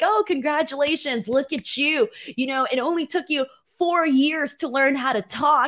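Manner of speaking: sneering, mocking tone.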